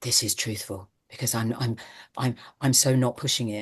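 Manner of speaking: quiet, low whispering. Mocking actors who mumble to seem truthful, whispering. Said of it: "I'm actually whispering".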